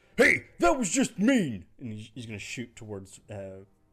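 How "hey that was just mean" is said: very high, shrill, very loud half-orc bandit hollering. Voicing a newly appeared half-orc bandit during a fight: half-orc bandit voice. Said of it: "another half-orc ... And he goes".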